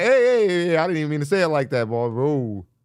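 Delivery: hasty, high and quick delivery. Acting out how men react after a remark comes out wrong: imitating a man walking back a remark.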